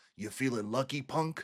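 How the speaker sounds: put-on gruff cowboy voice. Quoting a Western film line: Clint Eastwood voice. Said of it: "hearing Clint, Clint Eastwood go".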